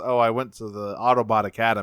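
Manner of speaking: ordinary delivery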